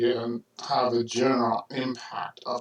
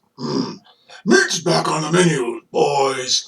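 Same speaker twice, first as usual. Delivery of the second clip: loud put-on orc general voice; 4 semitones higher, 8 dB louder than usual. Talking about changing your voice for voiceovers: put-on orc general voice. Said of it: "the General Orc goes".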